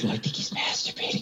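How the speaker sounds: whispering. Retelling what a woman whispered about a man in the other room, retelling a whisper. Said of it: "and then she whispers".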